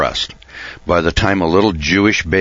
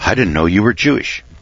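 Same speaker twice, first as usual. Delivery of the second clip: put-on surprised tone, higher pitch; 2 semitones higher than usual. Describing how Christians react to hearing of Passover practice, imitating their surprise. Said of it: "they look at you with surprise".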